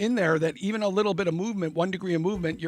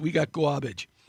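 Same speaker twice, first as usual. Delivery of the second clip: put-on Brooklyn cop accent, lower; 4 semitones lower than usual. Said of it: "a Brooklyn accent".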